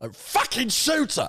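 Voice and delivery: very high, throaty voice pushed up from the throat. Asked to do Alfie again, show how he talks in an Alfie from Peaky Blinders voice. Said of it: "Alfie talks like that".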